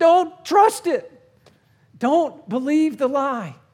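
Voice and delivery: shrill, very loud, high scream. Describing the Holy Spirit's warnings, the speaker acts out a scream. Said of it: "He's screaming".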